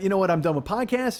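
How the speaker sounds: ordinary talk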